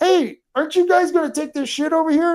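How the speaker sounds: high yelled call-out. Retelling asking two men to take away their trash: imitating a yell. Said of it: "and I yelled at him".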